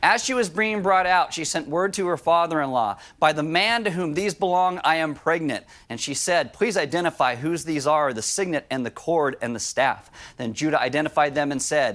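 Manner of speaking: ordinary talk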